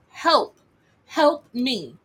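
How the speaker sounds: put-on screaming young man's voice. Retelling a sound heard in a TikTok video, imitating a young man screaming. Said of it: "sounded like a young man screaming".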